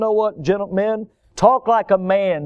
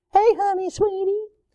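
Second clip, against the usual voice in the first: put-on very high baby-talk voice. Mocking men who talk to their children: baby talk. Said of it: "talk to their children in baby talk".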